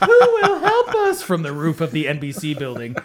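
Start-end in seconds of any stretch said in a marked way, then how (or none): 0.0-1.2 shrill, very high, drawn-out wailing crying scream. Retelling two figures begging for help from a rooftop: imitating crying and screaming. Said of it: "crying, screaming".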